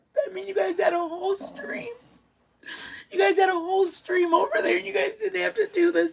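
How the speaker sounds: talking through tears, very high voice. A streamer thanking the mods who came over from their stream: crying while talking. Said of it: "I just need to stop crying".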